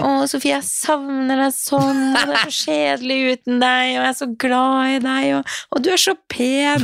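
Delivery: high, sappy, gushing put-on drunk voice. Retelling a FaceTime call from Tobias, the speaker is imitating drunk Tobias. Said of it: "nå er du full".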